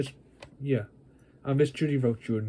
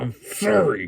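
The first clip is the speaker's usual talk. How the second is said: loud, rude, grudging, disrespectful tone; 2 semitones higher, 5 dB louder than usual. Apologizing to a teacher after being scolded: rude apology. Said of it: "Say you're sorry nicely".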